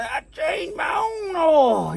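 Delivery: rough, gruff, slowed-down voice. Telling somebody you changed your own oil, in a rough gruff voice. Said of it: "you got to talk real rough like that".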